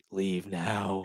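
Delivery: half-whispered, hushed stage whisper. Acting out an imagined warning to the kid: pretend half-whisper. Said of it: "whisper to the kid".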